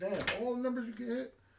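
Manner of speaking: high-pitched, fed-up, pissed-off cursing gripe. Voicing an angry other player at the dice table: imitating an angry player. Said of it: "This guy's pissed off too".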